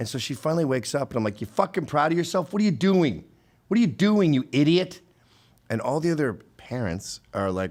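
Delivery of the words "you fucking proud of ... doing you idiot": pitched-up, loud yelling. Retelling waking a drugged girl and confronting her: retelling own yelling. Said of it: ""Don't yell."".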